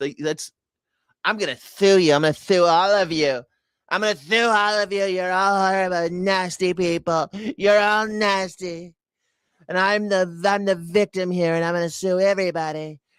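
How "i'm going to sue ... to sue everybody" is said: high, self-pitying, aggrieved villain-style rant. Mocking someone who sues everybody and plays victim: Donald Trump impression. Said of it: "that's what Donald Trump is".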